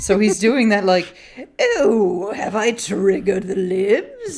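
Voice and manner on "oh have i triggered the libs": very slow, drawn-out, swooping supervillain voice. Imitating a radio host answering a prank caller: imitating Sebastian Gorka. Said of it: "talk like a cartoon supervillain".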